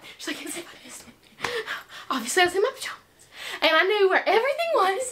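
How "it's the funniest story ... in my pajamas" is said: imitated breathless speech, higher and quieter. Retelling a grandmother's answer on getting in the car, imitating someone out of breath. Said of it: "She's, like, out of breath".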